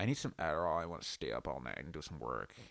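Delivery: low, soft put-on American accent. Talking about rappers and Adderall, imitating someone they know in an American accent. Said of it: "you know whose accent I'm doing".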